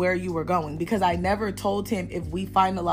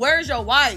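play-acted, pitched-up shouting; 5 semitones higher, 3 dB louder than usual. Retelling being stalked by a man, the speaker is retelling a yell. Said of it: "Now I'm yelling like".

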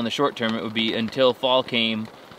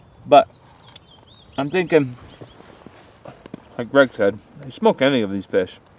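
speaking while chewing, mouth full of food; 5 dB louder than usual. Tasting fish and giving a verdict, talking with mouth full. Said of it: "I like to talk with my mouth full".

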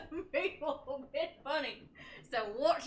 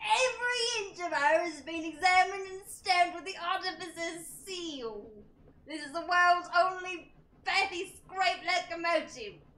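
put-on English accent, read aloud; 3 semitones higher than usual. Reading a character's lines aloud in a group reading: mock english accent. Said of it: "That is an expert English dialect right there".

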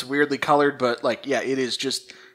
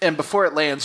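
usual speaking voice

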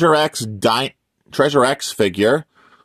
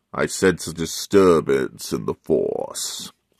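very low, soft villain voice; 9 semitones lower, 5 dB quieter than usual. Showing off a Darth Vader mask, saying a line in Darth Vader voice. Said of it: "I do a pretty good impression of Vader".

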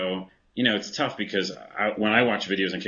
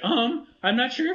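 put-on scared voice, much higher. Speaker imitates an arcade character who is always afraid; imitating an always-afraid character. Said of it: "he talks like this".

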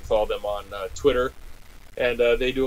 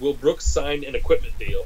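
ordinary talk, nothing marked

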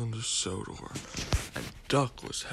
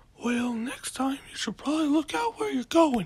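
very high, loud voice, cracking and breaking; 6 dB louder than usual. Voicing a reply to Duck while telling a train story, voice cracking. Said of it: "And my voice just cracked".

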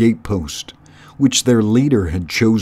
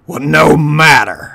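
sharp, raised, impatient snapping tone; 5 semitones higher, 5 dB louder than usual. Cluny, told by Red Tooth where they've docked, snapping. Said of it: "Cluny snapped".

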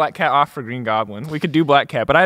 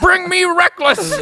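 high, piercing yell; 5 dB louder than usual. Imitating the head of broadcast asking for Reckless: J. Jonah Jameson voice. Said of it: "Just like J".

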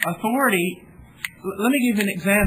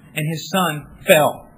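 ordinary delivery

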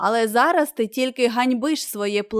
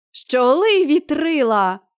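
sudden, exclaimed calling out; 4 semitones higher, 4 dB louder than usual. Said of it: "вигукнув Чарлі Блек".

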